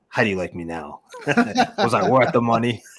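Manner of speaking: animated delivery, voice swinging and swooping around. Imagining a pass rusher trash talking a downed quarterback: Micah Parsons trash talk. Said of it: "my inner sort of Micah Parsons channel".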